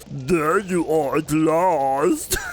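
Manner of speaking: put-on vampire character voice. Choosing a voice for a female character, in a vampire voice. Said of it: "this is the vampire voice".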